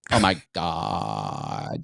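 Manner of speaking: heavy fry, very low, creaky and crackling. Mocking amateur video hosts who end sentences this way: imitating vocal fry. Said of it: "will end sentences like this".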